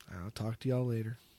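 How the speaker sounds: depressing tone. Signing off to the listeners: depressing tone. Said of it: "It was really depressing".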